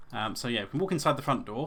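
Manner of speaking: ordinary delivery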